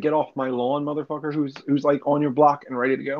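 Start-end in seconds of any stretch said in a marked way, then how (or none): none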